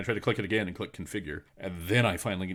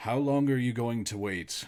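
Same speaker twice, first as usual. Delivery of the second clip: louder, higher voice heard through a shut door; 5 semitones higher, 3 dB louder than usual. Voicing a figure calling through a door to the players: speaking more loudly. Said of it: "more loudly".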